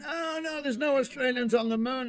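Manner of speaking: high, loud mock Italian accent.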